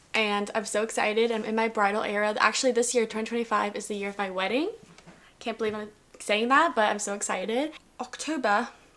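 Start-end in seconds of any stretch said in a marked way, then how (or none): 8.0-8.7 sudden British accent on a month name. Announcing the next month in a list of months: british accent. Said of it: "I said that in a British accent".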